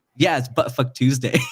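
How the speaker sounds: furious, all-out, angriest possible tone. Retelling what a friend said on seeing the whiteboards: imitating an angry tone. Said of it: "the most angry tone".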